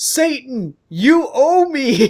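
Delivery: play-acted very high, shrill cry of agony. Narrator voicing the professor as the building shakes, screaming in pain. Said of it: "he screams some more".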